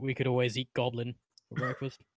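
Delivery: mumbled low, as an aside. Repeating the aside for someone who missed it: muttering under breath. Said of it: "under my breath, I say".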